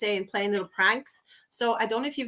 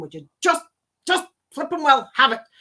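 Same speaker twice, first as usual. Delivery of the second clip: acted, raised, rising voice with a bit of temper; 3 semitones higher, 7 dB louder than usual. Retelling what the other speaker's mom was saying: imitating someone saying it with temper. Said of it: "the way I said it with a bit of a, a, a temper".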